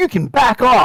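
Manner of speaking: fierce, furious, very high-pitched angry voice. Playing a character who confronts another character in the scene, angry voice. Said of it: "in an angry voice like you've never heard".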